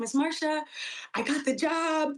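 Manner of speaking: mock choked-up, high, tearful happy crying. Retelling calling a teacher about getting the job: retelling happy crying. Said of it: "I'm, like, happy crying".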